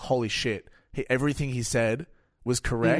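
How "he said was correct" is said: ordinary talk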